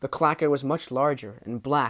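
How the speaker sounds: ordinary delivery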